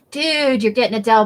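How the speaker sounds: put-on stoner voice, mock stoned delivery. Quoting a guy from old TV commercials: retelling a line like a stoner. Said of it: "he used to say it like a stoner".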